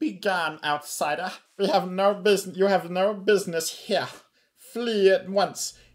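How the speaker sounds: shrill, loud, grandly dramatic kobold creature voice. Game master voicing a kobold answering the players: theatrical kobold voice. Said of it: "Kobold speaks".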